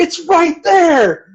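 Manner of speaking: imitated shout. Retelling shouting advice at the TV: retelling a shout at the TV. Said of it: "I shouted at the T V".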